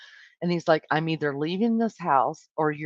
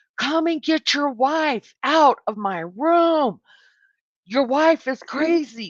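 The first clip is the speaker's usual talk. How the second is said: put-on scream, higher and louder; 9 semitones higher, 6 dB louder than usual. Retelling a son calling down to his dad: imitating a son screaming. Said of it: "started screaming to the top of his lungs".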